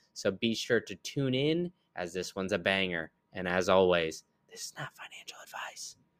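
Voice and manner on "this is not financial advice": soft whisper, barely voiced. Giving the usual episode disclaimer: whispered. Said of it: "I'm whispering it".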